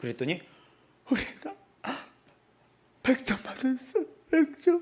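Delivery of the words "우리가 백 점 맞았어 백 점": put-on tearful, crying voice, higher pitch. Retelling a student's mother calling in tears: imitating a crying mother. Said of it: "막 울면서".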